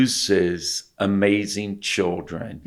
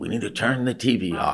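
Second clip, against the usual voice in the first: put-on Southern-sounding voice, quieter; 4 dB quieter than usual. Retelling a cartoon scene, imitating Homer Simpson. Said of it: "That's my imitation of him".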